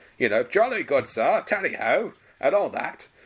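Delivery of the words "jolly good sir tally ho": RAF officer style voice. Describing a pilot whose plane crashed into a haystack, in a classic RAF pilot voice. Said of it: "who has that classic RAF voice".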